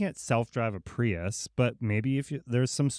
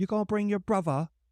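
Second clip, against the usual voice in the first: high-pitched mock Cockney accent. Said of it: "She does this accent where it's like Cockney".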